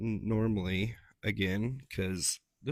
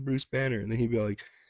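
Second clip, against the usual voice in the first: normal talking voice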